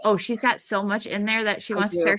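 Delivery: ordinary talk, nothing marked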